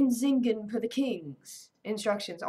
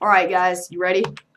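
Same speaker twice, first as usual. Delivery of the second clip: ordinary delivery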